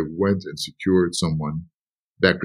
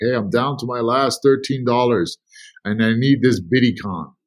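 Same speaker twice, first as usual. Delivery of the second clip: frightened, pleading, screaming woman's voice, put on; 5 semitones higher than usual. Retelling a late-night phone call from a caller in pain: imitating a screaming woman. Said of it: "she's yelling, and she's screaming".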